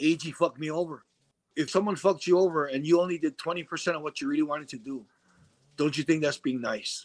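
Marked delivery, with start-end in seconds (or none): none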